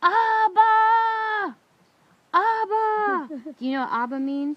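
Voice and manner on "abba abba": very high, loud, long, drawn-out sobbing wail. Speaker recalls sobbing in the car during a total meltdown: retelling crying out loudly. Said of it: "I'm crying out as loud as I possibly can".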